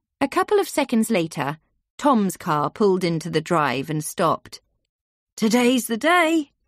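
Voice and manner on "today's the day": cheery, bright, cheerful voice, pitched up. Climbing out of his car in the drive, he speaks to her, cheerful. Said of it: "he said cheerfully".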